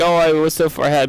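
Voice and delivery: ordinary talk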